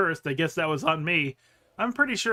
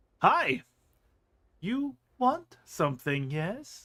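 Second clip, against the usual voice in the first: slow, pitched-up sensual hiss with yes stretched out; 6 semitones higher than usual. Narrating a woman greeting you with a knowing smile, hissed, drawn-out sensual yes. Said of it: "She hisses the yes, drawing it out slowly, sensually".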